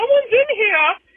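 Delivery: very high, disguised put-on voice. Retelling calling out from a bathroom stall, imitating a coworker's voice. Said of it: "mimic a coworker's voice".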